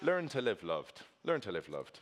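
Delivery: poor put-on Irish accent. Quoting a saying a man likes to repeat, in a bad Irish accent. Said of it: "I butchered that accent".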